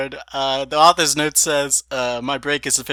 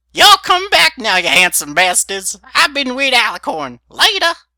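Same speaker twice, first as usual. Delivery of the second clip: put-on very high, loud old woman voice, swooping pitch; 9 semitones higher, 6 dB louder than usual. Ending the video with a sign-off in Granny Smith voice. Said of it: "in the Granny Smith voice".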